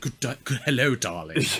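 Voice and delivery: put-on thick British accent, laid on thick. Describing an actor's role in a film, quoting his line in a thick british accent. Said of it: "With like a really thick British accent in this".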